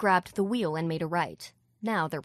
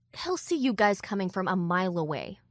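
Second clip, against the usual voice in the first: plain reading voice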